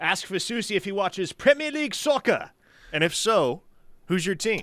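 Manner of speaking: put-on British accent, very high and loud. Reading a listener's soccer question, put-on British accent. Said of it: "I'm going to have to put on the British accent".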